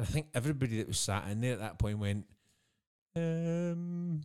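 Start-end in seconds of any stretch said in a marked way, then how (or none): 3.2-4.2 high, stumped, hesitant um. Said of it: "everybody ... went".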